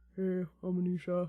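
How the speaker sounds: low, flat, dull, level monotone drone. Showing how a flat self-introduction sounds, in a low monotone. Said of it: "so low and just like monotone".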